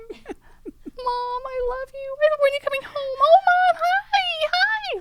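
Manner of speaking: high, nervous dog voice, very slow and drawn out. Asked what the pet dog would say about its owner, speaker voices him: Henry's put-on nervous voice. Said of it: "he talked like this because his name's Henry".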